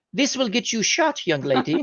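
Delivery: soft, put-on German accent. Retelling how he questioned a young woman about her papers, in his German accent. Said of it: "I go into my German accent".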